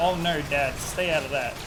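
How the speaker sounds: ordinary talk, nothing marked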